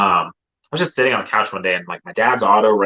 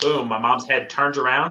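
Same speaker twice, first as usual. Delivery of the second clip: normal talking voice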